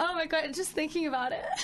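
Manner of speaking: voice catching, choking up, close to tears. Admitting to sobbing through the whole thing earlier; about to cry. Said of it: "Don't cry".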